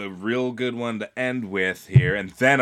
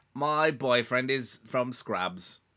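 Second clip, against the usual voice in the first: put-on British accent; 2 semitones higher, 6 dB quieter than usual. Reading British place names aloud: Florence Pugh impression. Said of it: "my Florence Pugh impression".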